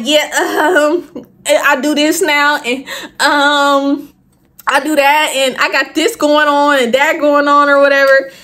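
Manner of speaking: halting, stammering ramble with drawn-out ums. Speaker re-enacts how they answered someone back then, retelling own stuttering. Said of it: "I'm stuttering and stuff".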